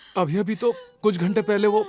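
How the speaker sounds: ordinary delivery, nothing marked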